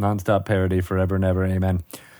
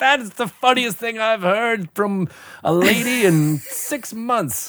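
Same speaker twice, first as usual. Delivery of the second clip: high, jovial sailor voice. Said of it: "and be like".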